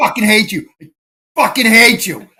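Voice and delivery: repeated frustrated cursing outburst, acted out, yelled. Recounting yelling at the car's screen while driving, retelling a yell. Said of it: "I'm yelling, ... like that".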